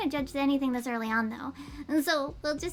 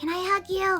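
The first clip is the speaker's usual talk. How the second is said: loud stage whisper; 4 semitones higher, 3 dB louder than usual. Sayori trots over to Monica and speaks to her in a loud whisper. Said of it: "She whispers loudly".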